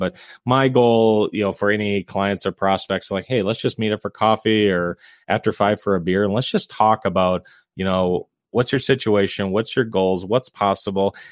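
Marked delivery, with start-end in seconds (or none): none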